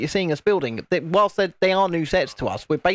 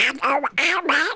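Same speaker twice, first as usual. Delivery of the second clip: put-on cartoon duck voice, much higher pitch; 10 semitones higher than usual. Showing off a Donald figure they just made, greeting Alex in a Donald Duck voice. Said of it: "That's my Donald Duck".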